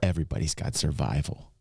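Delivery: low, muttered voice. Retelling what a player muttered under his breath: imitating Rob muttering under his breath. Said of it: "Rob under his breath said".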